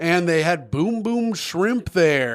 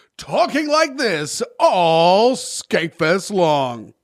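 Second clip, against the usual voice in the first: put-on announcer voice, all drawn out. Asking whether more people would have recognized him: put-on intro announcer voice. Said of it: "my intro voice".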